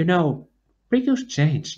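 tiny, small, high voice. Narrator reads Kaeri speaking to Sora, staring after Riku: tiny voice. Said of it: "Kaeri said in a tiny voice".

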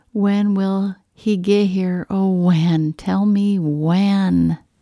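ordinary delivery

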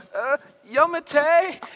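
high, slow, drawn-out yell. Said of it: "And then I yelled out".

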